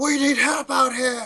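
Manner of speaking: very high-pitched, loud shouting. Voicing guards who missed their attacks: yelling guards calling for help. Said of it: "they start yelling".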